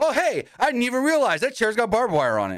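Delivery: mock nonchalant delivery. Retelling a wrestling commentator's remark: imitating a nonchalant remark. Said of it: "he says it all nonchalantly".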